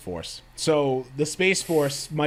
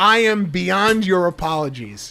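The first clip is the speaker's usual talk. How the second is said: put-on full-throated scream, slow and dragged out; 4 semitones higher, 5 dB louder than usual. Retelling a famous line: imitating Tom Cruise screaming. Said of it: "when he screams at the top of his lungs".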